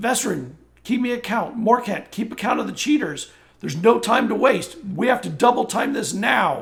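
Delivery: loud, rushed yelling. Narrating the scene as Bavis steps up and calls to Vesryn and Morcant: yelling out orders. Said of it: "he yells out".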